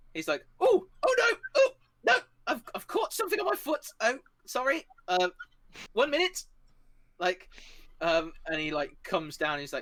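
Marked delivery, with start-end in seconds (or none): 0.6-6.4 very high, fussing, fumbling, flustered bumbling character voice. Voicing a bumbling character whose foot is caught: flustered bumbling character voice. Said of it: "bumbles out of his".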